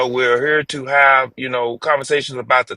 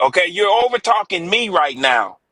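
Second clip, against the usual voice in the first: heated, high-pitched, insistent voice cutting in; 5 semitones higher than usual. Telling another speaker they are talking over him: yelling. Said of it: "'Cause you just yelling at me".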